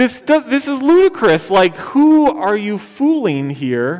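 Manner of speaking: high, loud, exasperated disbelief.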